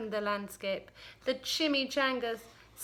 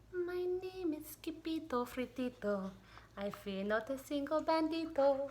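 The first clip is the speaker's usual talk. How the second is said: very, very soft, tiny voice; 9 dB quieter than usual. Narrator reading a character's line as he stands his ground, very, very soft voice. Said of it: "in a muy, muy, muy soft voice he said".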